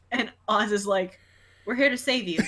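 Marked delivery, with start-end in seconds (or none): 1.6-2.4 mock unbothered, matter-of-fact, dry deadpan. Retelling a TV scene where a character arrives to help: imitating Oz's deadpan delivery. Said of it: "his deadpan way".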